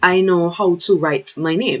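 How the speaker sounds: ordinary talk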